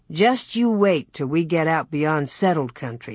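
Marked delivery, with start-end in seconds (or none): none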